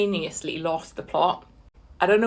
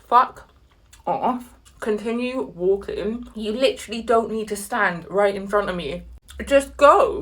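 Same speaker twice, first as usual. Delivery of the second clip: ordinary talk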